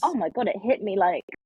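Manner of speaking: ordinary delivery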